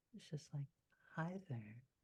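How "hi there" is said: gentle, bashful, soft and shy delivery. Voicing a character who walks over and greets someone: soft, shy voice. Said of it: "there's a softness to her voice".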